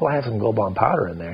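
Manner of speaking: ordinary talk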